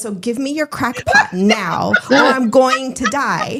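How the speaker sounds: dead-serious, urgent, completely earnest delivery. Retelling a pregnant neighbor demanding the coffee pot: imitating a dead-serious demand. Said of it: "she was just that serious too".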